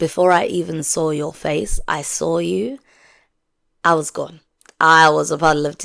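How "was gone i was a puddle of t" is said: ordinary talk, nothing marked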